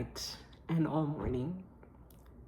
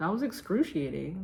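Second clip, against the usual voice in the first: usual speaking voice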